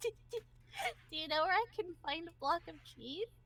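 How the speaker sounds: mock giggly voice. Imitating someone who asked a question: imitating someone giggling. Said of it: "she's kind of giggling".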